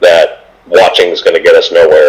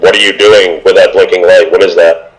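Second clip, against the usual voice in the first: ordinary talk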